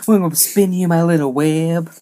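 cartoon henchman voice, animated-sitcom style. Retelling a scene, voicing one of Pete's cronies: Family Guy character voice. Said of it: "He literally talks like that guy from Family Guy".

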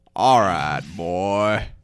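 loud cowboy voice. Doing an impression of Arthur Morgan getting on his horse, Arthur Morgan voice. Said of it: "This is my impression of Arthur Morgan getting on his horse".

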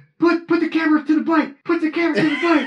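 very high, shrill, loud screaming. Retelling a stung man's line to the camera: imitating Coyote screaming. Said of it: "he's screaming".

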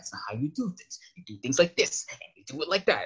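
exaggerated fanboy rant. Describing the over-the-top character he puts on for the podcast, imitating a fanboy rant. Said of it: "he'll go like fanboy ranting".

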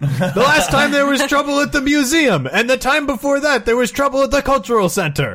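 put-on scolding old man voice.

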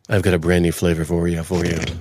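very deep voice pushed to the bottom. Offering coffee flavored Oreos after being asked to redo it: deeper voice. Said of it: "say it with your deeper voice".

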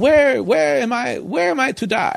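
put-on Eastern European accent. Retelling what the man beside the speaker asked as they went down, bad eastern european accent. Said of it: "it was like an Eastern European accent".

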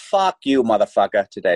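put-on Boston accent. The speaker quotes a line from his corrupt boston cop role, boston accent. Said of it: "I do the fucking Boston accent the whole time".

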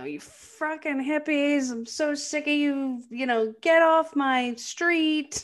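play-acted, very slow, drawn-out, high-pitched yelling. Retelling how Rick yells at kids in a car: imitating Rick yelling. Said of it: "starts yelling at these".

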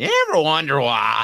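high, loud musing. Asked by a viewer, doing an easy impression: Andy Rooney impression. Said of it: "I could do Andy Rooney all day".

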